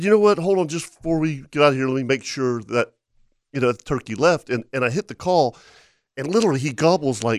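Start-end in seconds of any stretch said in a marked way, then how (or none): none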